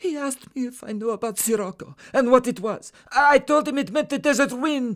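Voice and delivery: very high half-scream, crying through it. A captive answers his kidnapper's questioning, half-screaming, in tears. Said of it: "half screaming the words out of his body and with tears streaming down his face".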